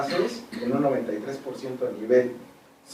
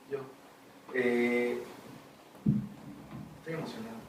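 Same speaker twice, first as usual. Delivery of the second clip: voice breaking, choked up, breathy, almost whispered; 11 dB quieter than usual. Speaking up in a group discussion, moved: voice breaking with emotion. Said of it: "Se me corta la voz".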